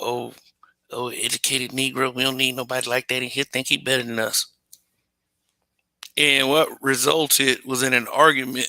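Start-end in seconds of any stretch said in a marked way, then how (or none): 0.0-4.5 put-on mutter under breath, quieter. Retelling a man's remark about his dad: imitating a muttered remark under breath. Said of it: "said this remark under his breath".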